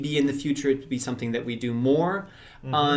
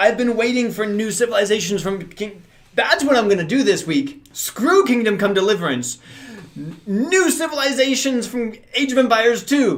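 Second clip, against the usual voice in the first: high, loud, can't-contain-it excited hollering; 8 semitones higher, 6 dB louder than usual. A fan reacting to Age of Empires two news, excited shouting. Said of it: "I know I'm shouting".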